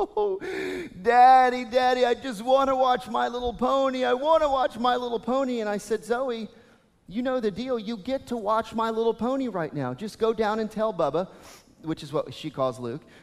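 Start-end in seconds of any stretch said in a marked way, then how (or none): 0.0-5.6 put-on high crying through sobs, in tears. Father retelling his daughter's tearful plea to him, imitating Zoe sobbing. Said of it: "she was just in tears, sobbing".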